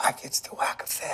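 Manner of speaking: whispering. The specialist talks about how he gets to work, whispering.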